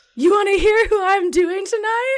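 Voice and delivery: loud, very high yell. Retelling calling out to the boyfriend through the house, screaming at top of lungs. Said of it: "I screamed it at the top of my lungs".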